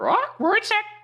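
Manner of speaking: very high, loud, shrill parrot voice. Playing the parrot that echoes the caretaker, in a parrot voice. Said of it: "I'll be the parrot".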